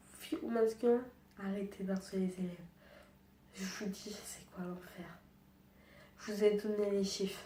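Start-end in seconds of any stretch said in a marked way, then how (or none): 3.6-5.1 soft, unvoiced whisper. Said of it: "je parle pas fort sur cette vidéo".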